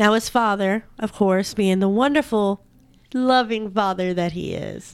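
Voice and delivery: heavy, thick sarcasm laid on. Talking about the boy's father, with heavy sarcasm. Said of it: "Heavy on the sarcasm".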